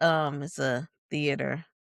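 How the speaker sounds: ordinary talk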